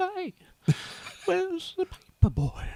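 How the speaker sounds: put-on Southern twang voice. Practising the voice with a Southern twang: Herbert voice with Southern twang. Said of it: "but then you add a twang to it".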